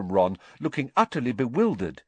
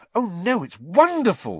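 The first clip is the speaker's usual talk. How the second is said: earnest, sincere delivery, much higher pitch; 7 semitones higher than usual. Replying to a boy who says her subject looks terrible, earnest. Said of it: "said Hermione earnestly".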